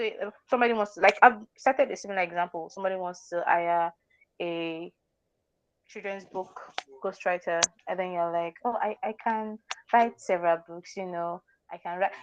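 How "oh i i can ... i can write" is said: unsure, unconfident, quieter voice. Speaker demonstrating a ghostwriter pitching to a client, unconfident. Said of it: "You're not even confident about yourself".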